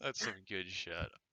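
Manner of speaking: laughing.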